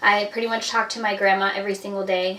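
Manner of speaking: plain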